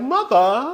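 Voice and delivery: imitated British accent. Retelling what a son said at a dinner table: imitating a british accent. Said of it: "I think in a British accent".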